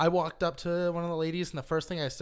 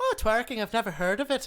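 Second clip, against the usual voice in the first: put-on Irish accent, kept up, pitched up; 6 semitones higher, 4 dB louder than usual. Retelling a reply to a girl at a party in an Irish accent. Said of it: "I was using the Irish accent".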